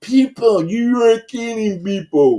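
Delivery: deliberately dumbed-down, stupid-sounding speech. Showing how to talk to dumb people, talking stupid on purpose. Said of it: "let me talk stupid so people understand".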